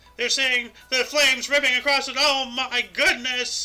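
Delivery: put-on old-time radio broadcaster voice. Riffing on the Hindenburg broadcast with another speaker, old-time radio announcer voice. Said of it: "wanted to sound like an old time radio guy".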